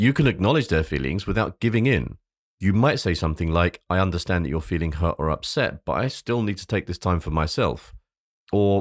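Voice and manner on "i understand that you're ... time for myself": usual speaking voice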